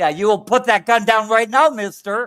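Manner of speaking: very loud, high, stern, strict scolding. Joking about how to make an armed kid drop a gun: mock stern parent scolding. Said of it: "talk to him like a stern parent".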